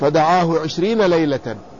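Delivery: plain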